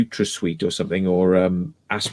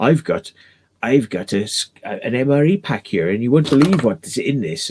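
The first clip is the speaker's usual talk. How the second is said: very bad, clumsy fake Scottish accent; 3 semitones higher than usual. Quoting a YouTuber opening an MRE pack: very bad Scottish accent. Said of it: "It's a very bad Scottish accent".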